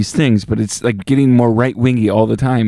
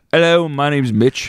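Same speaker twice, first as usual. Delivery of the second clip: put-on British accent, polite tone; 3 semitones higher than usual. Pretending to be Mitch as a new co-host, imitating Mitch in a British accent. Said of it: "that's a British accent".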